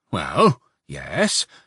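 grudging, wary, reluctant, suspicious. A woman at her door answers a visitor, reluctant and suspicious. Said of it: "the woman answered reluctantly and suspiciously".

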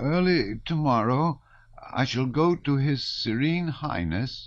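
trembling, tremulous voice, high and slow. A confused man reads a sheet aloud at a tall lad's demand, tremulous voice. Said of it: "in a rather tremulous voice".

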